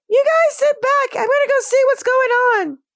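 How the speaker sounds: mock squeaky mouse voice. Player voicing Minnie addresses the other players: higher voice as Minnie. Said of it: "my voice is going to be a little higher".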